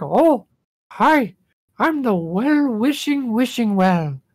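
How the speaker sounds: calm cartoon voice, very high, squeaky and very slow. Recalling the wishing well character's greeting, in a calm Mickey Mouse-like voice. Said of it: "almost Mickey Mouse but calmer kind of voice".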